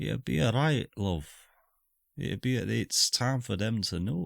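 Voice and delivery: faint whisper in a character voice. Voicing a character who whispers to another at a departure: faint whisper as Xandar. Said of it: "the faintest sort of whisper from Xandar".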